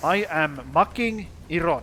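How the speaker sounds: loud Finnish-accented English, making said as mucking. Speaker demonstrates how finnish people talk, in a finnish accent. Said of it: "Finnish people talk like this".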